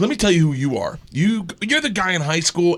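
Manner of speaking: put-on launching into a drunken rant. Retelling a drunk friend insulting a cop: imitating a friend lighting someone up. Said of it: "just starts lighting him up".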